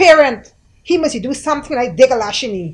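very loud, hostile, aggressive, combative delivery. Retelling a woman's reply after asking her again, in a mock-aggressive tone. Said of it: "in a very aggressive manner".

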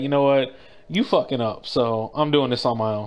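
ordinary talk

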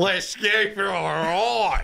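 exaggerated, high Australian accent, "ride" stretched out. Reacting to a clip, repeating its line in an exaggerated Aussie accent. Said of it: "Aussie accents are the fucking best".

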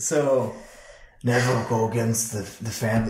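slow, badly done put-on mob-boss voice. Joke that the Pope talks like the Godfather, in a bad Marlon Brando impression. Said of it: "That's the worst Marlon Brando impression".

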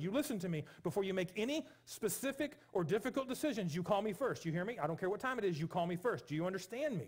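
stern, insistent, aggressive, forceful delivery. Retelling a phone call warning someone to call first: retelling own warning aggressively. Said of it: "I'm saying it a little more aggressively than I did".

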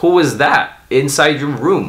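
normal talking voice

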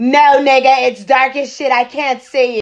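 very loud, drawn-out, exasperated, irritated yelling. Retelling her irritated answer up to the balcony: retelling her own irritated shout. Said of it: "irritated and loud as fuck I say".

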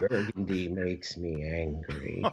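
very deep, dramatic baritone. Retelling what God told him, in a deep baritone. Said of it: "with that deep baritone".

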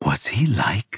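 voice dropping. Blomqvist asks Ulf about a man Ulf says he knows, voice dropping. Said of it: "his voice dropping".

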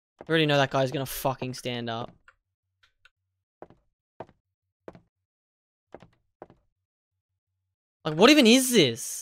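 afraid, frightened voice. Streamer playing through a scary game: frightened. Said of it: "I'm actually freaking frightened".

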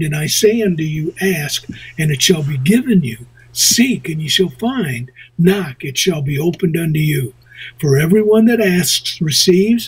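normal talking voice

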